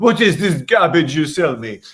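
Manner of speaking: exaggerated French accent. Retelling a male model's story of what the french would say, in a french accent. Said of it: "my French accent's".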